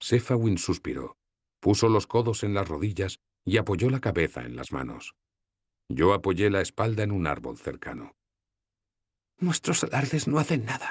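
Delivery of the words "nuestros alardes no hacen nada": half-voiced stage whisper, pitched up. Sephawin speaks to the narrator, half-whispering. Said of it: "susurró".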